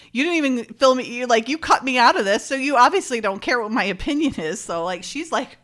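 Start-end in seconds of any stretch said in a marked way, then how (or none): 0.2-4.6 acted, pitched-up, snarky, pissy tone. Retelling a character's retort to being cut out: imitating a snarky tone. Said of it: "she gets kinda snarky".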